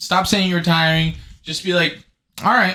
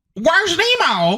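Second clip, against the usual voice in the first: pitched way up, clumsily and badly; 12 semitones higher than usual. After describing Ellen dancing, the speaker does an Ellen impression. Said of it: "that's my Ellen impression".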